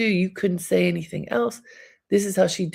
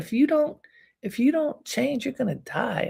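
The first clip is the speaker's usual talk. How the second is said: put-on high, girlish, lecturing little girl voice; 6 semitones higher than usual. Speaker retells someone lecturing an elder, imitating Susan's little girl voice. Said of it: "in her big little girl voice".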